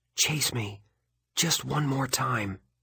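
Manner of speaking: hushed birdlike voice. Narrator teasing the one who keeps chasing them, whispered bird voice. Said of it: "I whisper in my bird voice".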